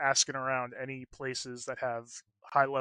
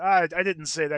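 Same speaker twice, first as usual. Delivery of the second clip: raised voice, slight stammer on the first word; 4 semitones higher, 7 dB louder than usual. Voicing a flustered character denying what he said: stuttering. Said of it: "He's kinda stuttering a little bit".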